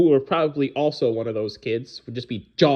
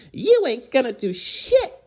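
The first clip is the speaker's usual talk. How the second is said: put-on very high, sing-song little kid voice; 12 semitones higher than usual. Retelling a confrontation with a woman who threatened them: little kid voice. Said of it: "It's my little kid voice".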